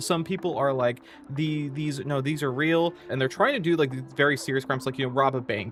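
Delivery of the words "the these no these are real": ordinary talk, nothing marked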